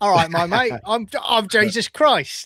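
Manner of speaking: put-on British accent, drawled out slowly. Speaker jokes about a jesus film where everyone has his accent, mock british accent. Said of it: "they've all got mock me accents".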